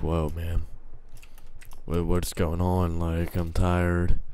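raspy, very deep, soft, slow morning drawl. Speaker acts out how guys sound when they just wake up, imitating raspy just-woke-up voice. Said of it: "raspy, deep voice that the guys get when, you know, they just wake up".

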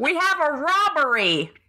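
drawn-out, deliberate, high, slow delivery. Imagining David Lynch as Commissioner Gordon: Gordon Cole voice. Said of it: "As Gordon Cole".

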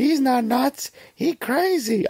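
put-on childlike character voice. Talking about a film's bridge scene, quoting a character's line: Short Round voice. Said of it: "That's me doing the Short Round voice".

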